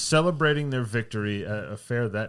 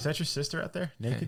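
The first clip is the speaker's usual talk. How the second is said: taunting, trash-talking tone in a higher voice; 5 semitones higher, 5 dB quieter than usual. Retelling how Porter taunted the other team: imitating Porter trash-talking.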